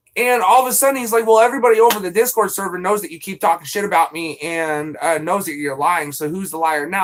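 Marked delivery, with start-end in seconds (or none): none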